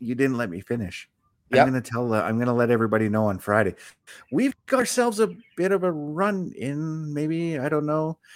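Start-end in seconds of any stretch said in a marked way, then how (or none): 0.0-1.1 mock-scared, put-on frightened delivery. Recounting what Bayley said on Monday, mimicking Bayley's scared tone. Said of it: "she said it in a very scared tone".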